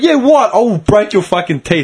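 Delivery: acted menacing, nasty tone. Speaker retells confronting a teenager, re-enacting a not-nice threat. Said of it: "I wasn't even being nice about it anymore".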